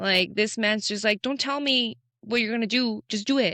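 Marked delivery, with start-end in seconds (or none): 1.2-3.5 mock blunt, military-style, assertive, no-nonsense tone. Quoting a military coach's blunt advice: imitating an assertive coach. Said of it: "this man was so assertive".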